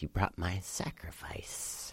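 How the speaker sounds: eerie, slow, hushed witch-style whisper.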